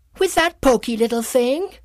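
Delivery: piercing, shrill, loud shriek, very high. A narrator voices a clamp-like tool mocking a corkscrew; shrieking. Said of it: "Shrieked a curvaceous clamp-like tool".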